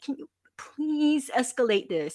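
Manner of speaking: high-pitched, begging, pleading voice. Retelling asking a support agent to escalate: retelling own pleading. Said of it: "just pleading with him".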